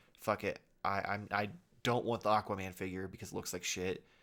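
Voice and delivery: plain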